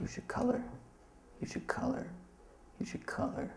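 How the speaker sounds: high, urgent whisper with a pressing tone.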